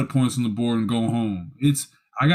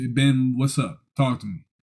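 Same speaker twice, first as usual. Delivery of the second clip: ordinary delivery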